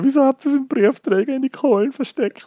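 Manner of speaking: crying, very high-pitched tearful voice. Speaker retells going to Mama in tears: retelling crying through tears. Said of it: "so unter Tränen zur Mama".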